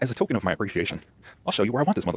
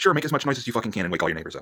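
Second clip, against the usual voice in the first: pointed, meant-to-be-overheard tone; 2 semitones higher than usual. Retelling a remark made to the guy upstairs: retelling saying it loudly. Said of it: "and I say loudly".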